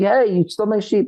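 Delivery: mock very high, shrill screaming. Retelling a story of a farmer confronting his neighbor: imitating someone screaming. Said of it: "He starts screaming".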